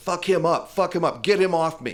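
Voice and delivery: held-back, mild yell. Speaker recounts a fight during an arrest, retelling a man's yell to his friends. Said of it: "he was yelling".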